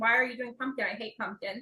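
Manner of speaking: ordinary talk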